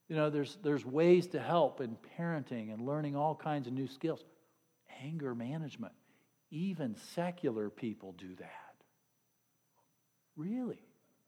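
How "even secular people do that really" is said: sarcastic, swooping, sing-song mock surprise. The speaker openly admits to being sarcastic mid-remark, sarcastic. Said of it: "Yes, I am sarcastic".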